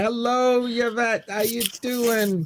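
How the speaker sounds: playful, sweet, high, slow put-on old lady voice.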